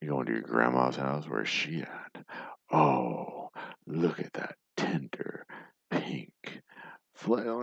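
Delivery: creepy put-on big bad wolf voice. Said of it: "Do they know what this sounds like?".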